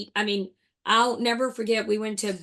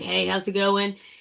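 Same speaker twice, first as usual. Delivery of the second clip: put-on smoker-sounding voice. Showing how own voice sounds on camera: imitating own smoker-sounding voice. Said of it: "I feel like I sound like a smoker".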